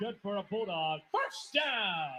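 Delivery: soft voice with a brief little crack. Announcer calling the football game on air, with a little voice crack. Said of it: "a little voice crack there by the P A announcer".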